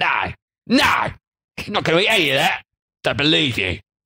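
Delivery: put-on Cockney accent, annoyed, dismissive and angry. Putting on a voice for people refusing something, in an angry cockney voice. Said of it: "that's my angry voice now for this episode".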